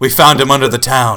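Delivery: very low, deep, low-pitched character voice. Narrating a scene, voicing a halfling character in a very low halfling voice. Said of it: "I've got a very low voice for a halfling".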